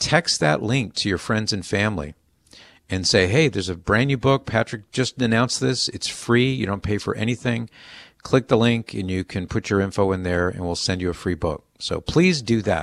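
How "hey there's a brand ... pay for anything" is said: usual speaking voice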